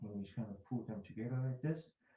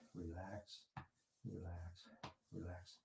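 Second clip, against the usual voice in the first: very quiet, soft, low, soothing whisper; 6 semitones lower, 14 dB quieter than usual. Guiding listeners through a shoulder massage: whispering. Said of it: "while you're whispering to yourself".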